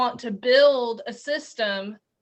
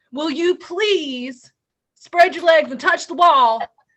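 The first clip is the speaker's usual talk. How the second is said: loud, high-pitched, barked yelling; 5 semitones higher, 7 dB louder than usual. Describing how armed people yell orders at somebody, imitating that yelling. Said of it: "when they're yelling at somebody".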